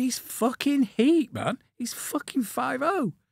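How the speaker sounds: acted, very high, drawn-out, stretched scream. Retelling what a mate screamed at his friend: imitating someone screaming. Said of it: "his mate's screaming at him".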